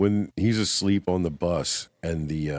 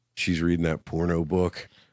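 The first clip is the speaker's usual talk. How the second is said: normal talking voice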